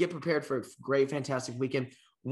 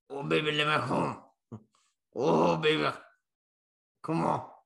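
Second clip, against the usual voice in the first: put-on whisper, close to the ear. Imagining Ed Orgeron whispering in your ear: whispering as Ed Orgeron. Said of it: "that voice whispering in your ear".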